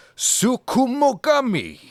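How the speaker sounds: high, loud Japanese accent. Trying to pronounce a japanese term for a co-host, the speaker leans into the accent. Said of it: "words come with accents".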